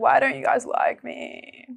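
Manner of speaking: put-on whining. Acting out going up to people to ask why they dislike you, mock-whiny whinging. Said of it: "you're whinging".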